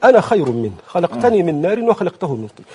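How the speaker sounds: ordinary delivery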